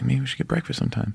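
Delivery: quick, rushed, hushed whisper, barely audible. Retelling an invitation to breakfast at a premiere: imitating someone whispering. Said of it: "he started to whisper".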